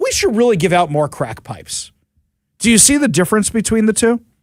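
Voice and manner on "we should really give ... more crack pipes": ordinary talk, nothing marked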